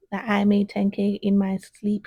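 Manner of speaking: usual speaking voice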